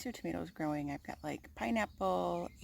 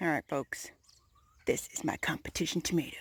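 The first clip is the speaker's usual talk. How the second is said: mock serious, put-on serious tone; 2 semitones lower than usual. Showing the garden's competition tomato: mock serious voice. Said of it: "hence the serious sound in my voice".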